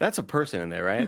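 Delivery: offhand, muttered aside. Retelling Nick's remark during the ride, imitating him muttering under his breath. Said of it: "Nick under his breath goes".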